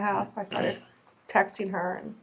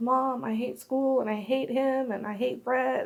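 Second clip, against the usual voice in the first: mock hurt child voice, crying through tears; 4 semitones higher than usual. Retelling what her crying daughter said after school: imitating her daughter crying. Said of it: "And she just started crying".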